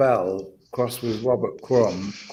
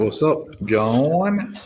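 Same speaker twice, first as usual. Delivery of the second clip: put-on American accent; 3 semitones higher, 3 dB louder than usual. Greeting john as he shares his screen: fake american accent. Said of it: "are you trying to fake an American accent?".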